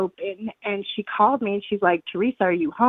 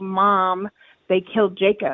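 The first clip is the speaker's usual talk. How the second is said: ordinary delivery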